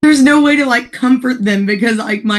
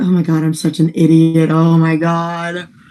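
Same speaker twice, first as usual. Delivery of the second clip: mock very slow, cringing, embarrassed self-reproaching tone; 8 semitones lower than usual. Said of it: "Look away real awkward".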